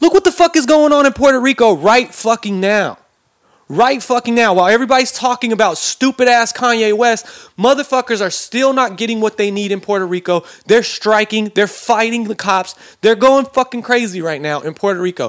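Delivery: angry, worked-up rant. Speaker ranting to listeners, addressing them as you guys, heated angry rant. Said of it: "I'm a little fucking heated".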